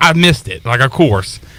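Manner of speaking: ordinary talk, nothing marked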